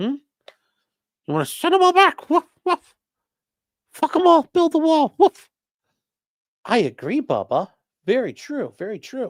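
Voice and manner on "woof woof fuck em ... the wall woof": very high, squeaky little dog voice. Pretending the dog answers a question: voicing Clyde the dog. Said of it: "what's that, Clyde?".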